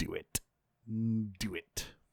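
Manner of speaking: very soft, low, menacing whisper.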